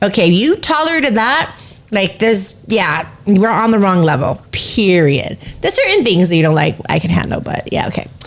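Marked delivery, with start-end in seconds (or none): none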